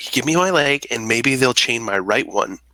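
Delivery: acted, whispered delivery. Playing a character who whispers to Thry: whispering in character. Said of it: "I whisper to Thry".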